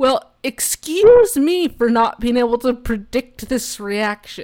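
loud, cutting, snarky sarcastic tone. Suggesting what someone could say in that scenario, snarky tone. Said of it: "it's in a snarky way".

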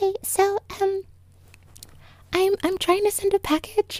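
put-on little-kid voice, like a five-year-old. Retelling trying to send a package: little five-year-old voice. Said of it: "going into the little five-year-old voice that I have in me".

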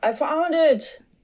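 sudden, high-pitched shout. Speaker retells a police officer searching the apartment, acting out the officer's yell. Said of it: "one of them yelled".

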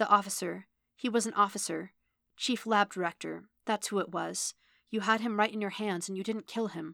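ordinary delivery

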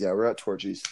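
normal talking voice

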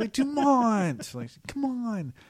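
mock very high, shrill, peevish, petulant complaining. Recapping a scene, speaker voices Yori calling to the old man, imitating petulant Yori. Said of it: "Yori says a little petulantly".

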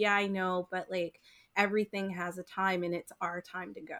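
ordinary delivery

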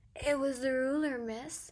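loud, sudden blurted words. A narrator reads their younger self answering the bellowing teacher: blurted out. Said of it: "I blurted".

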